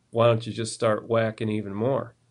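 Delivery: ordinary talk, nothing marked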